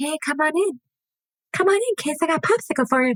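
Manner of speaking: put-on very high, creepy old-man voice. Retelling how Jeffrey answers the door, the speaker voices him in a creepy old man voice. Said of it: "It was the creepy old man voice for me".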